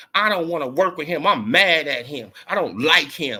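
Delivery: petulant, spoiled diva whine. Mocking a boxer who refuses a fight: imitating Tink talking like a diva. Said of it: "talking like a diva".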